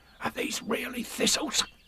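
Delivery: hushed, barely voiced, soft breathy whisper. Narrator reads a character's question to his friend, in a whisper. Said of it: "he whispered".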